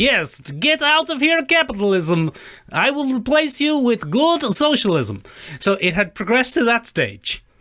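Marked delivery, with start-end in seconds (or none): 0.0-5.2 put-on ridiculous comedy Russian villain accent, pitched up. Speaker showing the stage the stereotype had reached: comedy Russian baddie accent. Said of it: "to the comedy, almost ridiculous Russian baddie".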